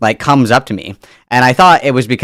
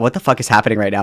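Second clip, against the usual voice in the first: put-on panicked voice, quieter; 2 semitones lower, 5 dB quieter than usual. Retelling a stranger's joke at the self-checkout: imitating own panicked thought. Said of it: "kind of panicking".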